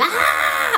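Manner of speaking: loud high screaming. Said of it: "I'm, I'm screaming".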